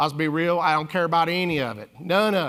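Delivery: put-on accent of Virginia. A speaker repeats what a man from Virginia told him, in a Virginia accent. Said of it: "he was from Virginia, so it sounded more like this".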